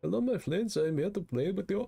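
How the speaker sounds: put-on Swedish accent. Retelling what another player said on walking up, in a put-on Swedish-ish accent. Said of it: "in like some kind of like Swedish accent".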